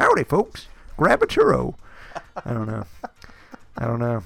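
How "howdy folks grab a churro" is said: put-on old prospector voice, much higher. Imagining a prospector greeting guests with churros near Big Thunder Mountain, old prospector voice. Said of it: "Some like old prospector".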